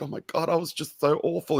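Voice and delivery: put-on, high, on the verge of tears, self-reproaching. Retelling what a drunk woman said, imitating her getting teary. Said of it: "and then she's like getting teary".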